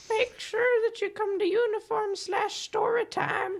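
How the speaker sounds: very high-pitched put-on grandma voice. Announcing story time as a bit, old lady voice. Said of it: "It's the old lady voice".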